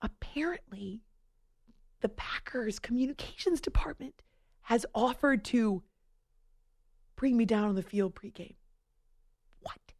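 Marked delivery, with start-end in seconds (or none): 0.0-4.2 soft, hushed, secretive whisper. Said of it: "I'm whispering".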